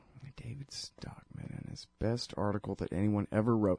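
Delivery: muttering. Searching for an article, the speaker is mumbling to themself. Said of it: "Sorry, I'm mumbling".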